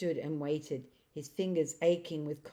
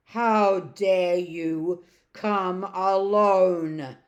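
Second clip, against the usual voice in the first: terrible, booming witch voice, very loud, "alone" drawn out; 2 semitones higher, 11 dB louder than usual. Reading the witch's reply when the boy arrives alone: terrible voice. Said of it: "said the witch in a terrible voice".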